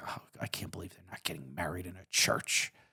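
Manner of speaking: breathy, barely voiced under-the-breath whisper. Retelling what parents said at an elopement: imitating someone muttering under their breath. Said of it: "said it, like, under their breath".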